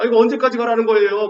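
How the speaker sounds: loud, high shout.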